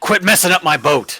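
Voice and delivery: angry shout. Voicing Valkyr, who is upset about a mess on his boat: Valkyr yelling angrily. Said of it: "Valkyr yells at you".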